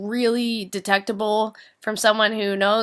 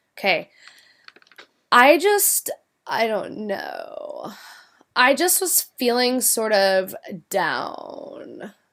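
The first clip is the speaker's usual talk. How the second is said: slow, fried, creaky, crackling vocal fry. Showing how people started to speak, the speaker talks in vocal fry. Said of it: "it's like frying your vocal cords".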